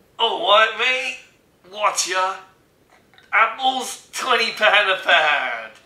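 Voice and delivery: put-on loud, high London accent, belted out. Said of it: "do your London accent, your London impression".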